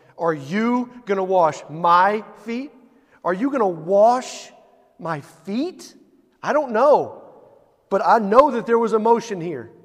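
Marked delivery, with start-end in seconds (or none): 0.2-5.9 emphatic delivery, slower pace. Demonstrating how Simon Peter asks whether he will wash his feet, emphatic reading. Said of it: "Add your emphasis".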